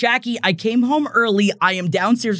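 ordinary delivery

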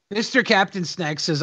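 usual speaking voice

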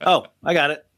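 put-on annoyed tone. Retelling a cast member's reply to engagement talk: imitating someone annoyed. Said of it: "Venita is so fucking annoyed at this point".

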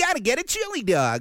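grating, very high-pitched, annoying cartoon hero voice. Describing the old Sonic cartoon's voice acting, doing the Sonic voice. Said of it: "that fucking annoying Sonic voice".

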